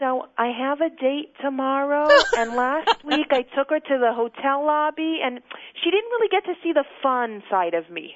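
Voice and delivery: very nervous, anxious, uneasy voice. Retelling the first phone call to the show, imitating a nervous caller. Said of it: "this guy with this very nervous voice".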